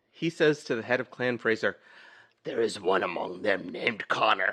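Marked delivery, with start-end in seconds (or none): 2.4-4.5 dropped, straining voice pushed down as deep as possible. Retelling a film scene, voicing the Kurgan: imitating the Kurgan's voice. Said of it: "I can't get to that register".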